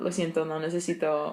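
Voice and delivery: ordinary talk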